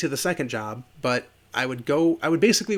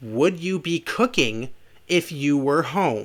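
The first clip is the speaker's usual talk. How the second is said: stuck-up, snooty, condescending, superior tone. Retelling a woman repeating her question to the speaker: imitating a snooty tone. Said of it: "she says again in a snootier tone".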